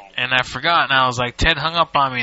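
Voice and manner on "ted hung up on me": ordinary talk, nothing marked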